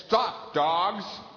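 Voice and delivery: acted, bold, strong, brave, loud commanding tone. Retelling turning to face two dogs, acting out a strongest, bravest voice. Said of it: "in my strongest, most bravest voice".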